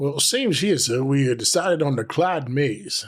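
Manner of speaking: put-on southern American accent throughout. Speaker answering what was chosen to drink tonight, southern accent. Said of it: "you're doing a southern accent".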